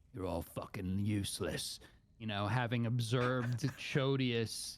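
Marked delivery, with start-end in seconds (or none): 0.1-1.8 low, mumbled mutter under the breath. Playing a character in a game who is annoyed at the party: muttering under breath. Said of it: "I mutter under my breath".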